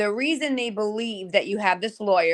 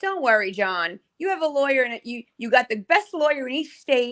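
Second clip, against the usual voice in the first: dry, facetious, sarcastic, mock-reassuring tone; 3 semitones higher than usual. Retelling own earlier comment that others took seriously: imitating own past sarcastic remark. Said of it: "I was being, like, uh, like, sarcastic".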